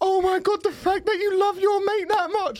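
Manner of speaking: mock weepy, tearful crying voice, very high-pitched. Retelling what one of the girls said, imitating a girl crying. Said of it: "One of the girls starts crying".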